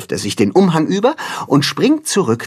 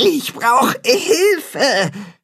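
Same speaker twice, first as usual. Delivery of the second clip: very high groaning with strain; 13 semitones higher than usual. Unable to pull the heavy bucket out of the pond, groaning. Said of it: "ächzt das Katzenhaar".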